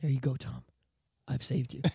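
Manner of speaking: exceedingly courteous, well-mannered, very polite tone. Acting out an imagined fan handing back a retuned guitar: very polite. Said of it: "he very politely just goes".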